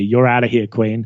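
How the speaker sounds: ordinary talk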